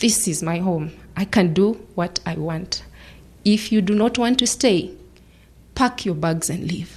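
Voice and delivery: ordinary talk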